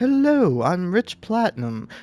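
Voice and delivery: homemade, put-on British accent voice. Reading a text aloud in a self-described british voice: put-on british accent. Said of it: "I'm reading this in my British voice".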